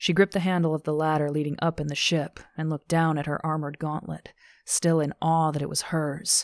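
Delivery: plain reading voice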